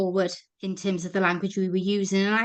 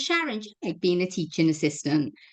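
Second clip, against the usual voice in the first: ordinary delivery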